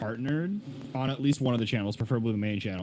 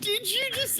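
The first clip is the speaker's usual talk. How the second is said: very high, dumbfounded voice break shooting up. Recalling how the other person reacted, imitating voice shooting up. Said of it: "your voice shot up like 2 octaves".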